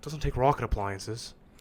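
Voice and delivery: casual, normal regular-guy character voice. Trying out a Ricky impression with friends: Ricky impression. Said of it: "Let me try to do a Ricky impression".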